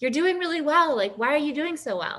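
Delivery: high, called-out yell from a distance. Retelling what a woman shouted from behind in a store: imitating a woman yelling. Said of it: "she's, like, yelling, and she goes".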